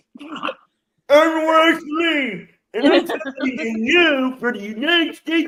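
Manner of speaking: high, loud, mocking shout. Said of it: "This is what you sound like".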